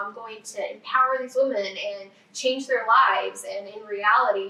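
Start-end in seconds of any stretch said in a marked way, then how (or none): none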